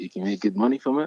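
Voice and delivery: put-on perked-up excitement. Retelling hearing that modeling pays well: imitating own perked-up excitement. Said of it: "you was perked up".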